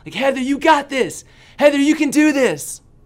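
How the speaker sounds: shrill, very loud, high-pitched, encouraging cheering yell. Retelling cheering Heather on from the bottom as she fears the height, retelling a yell. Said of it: "I'm down at the bottom and I'm yelling".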